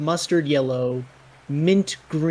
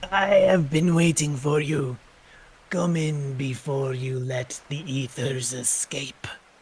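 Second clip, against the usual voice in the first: voice worn down to a rasp. Game master voices someone greeting the players as they open a tent flap, raspy voice. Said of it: "you hear a raspy voice say".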